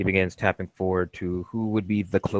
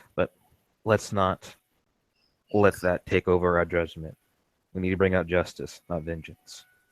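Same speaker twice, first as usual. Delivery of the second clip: mild, gentle yet earnest, serious tone. Storyteller voices Kumba, who nods, in a soft but serious tone. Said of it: "soft but serious tone".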